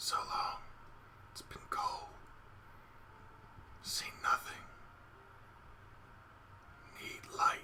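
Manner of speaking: hushed, barely there, very quiet whisper. Voicing whispers in the back of a character's head: mild whispering voice. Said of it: "You hear a mild voice whispering".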